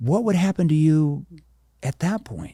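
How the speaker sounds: concerned, caring, worried tone. Demonstrating to a sales audience how to question a prospect, in a concerned tone. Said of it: "Concern tone".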